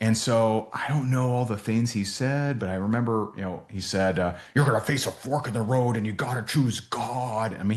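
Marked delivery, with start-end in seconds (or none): 4.5-7.5 put-on bellowing preacher voice, higher. Retelling a sermon that someone bellowed in prayer: imitating someone bellowing. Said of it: "he's, like, bellowing this".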